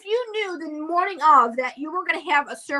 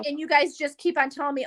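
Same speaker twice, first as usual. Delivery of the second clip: ordinary talk, nothing marked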